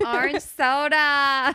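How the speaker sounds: put-on loud New Jersey accent, "soda" drawn out. Repeating the other speaker's words, imitating a Jersey accent. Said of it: "You just had a Jersey accent when you said orange soda".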